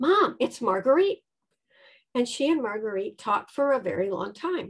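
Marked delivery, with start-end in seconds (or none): 0.0-1.2 eager, excited announcing voice. Retelling calling a mom to the phone: retelling own excited call. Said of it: "saying in my excited voice".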